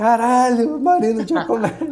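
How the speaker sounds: high, excited, bursting shout. Retelling seeing someone in person for the first time, retelling a shout. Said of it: "Mas eu gritei real em português".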